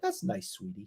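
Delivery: whispered, hushed, unimpressed voice. Contrasting excited friends with a parent's reply: imitating mom, unimpressed. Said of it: "Unlike my mom going".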